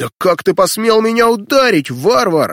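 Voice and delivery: vicious, spiteful, high-pitched snarling snap. Narrator reads Gurush answering the big man who knocked him down: snapping back viciously. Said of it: "вдруг злобно огрызнулся".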